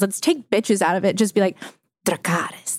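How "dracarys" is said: soft breathy whisper close into the mic. Showing how to open the show each week: whispering. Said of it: "whisper it into the microphone".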